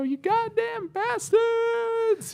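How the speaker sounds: play-acted very high, freaked-out screaming outburst. Retelling a show scene where he is attacked: imitating someone screaming. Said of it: "he starts screaming at him".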